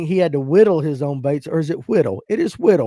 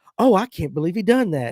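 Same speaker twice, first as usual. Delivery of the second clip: scripted, read-off delivery, like reading from a page. Mocking a podcast host for sounding scripted: imitating Alex, mocking scripted delivery. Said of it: "Alex would be like".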